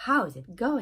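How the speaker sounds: falling intonation, pitch drops at end on going. Teaching English intonation to French speakers: falling intonation on going. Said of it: "The intonation goes down at the end".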